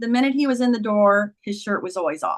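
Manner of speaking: usual speaking voice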